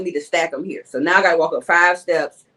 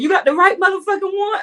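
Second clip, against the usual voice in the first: shrill, very high-pitched screaming. Retelling throwing groceries at a customer: imitating own screaming. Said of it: "I was screaming".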